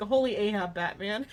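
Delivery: mumbled, half-spoken, words run together. Speaker quotes a joke line from Ratio's voice actor, imitating Ratio's mumbled line. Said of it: "He he mumbled like".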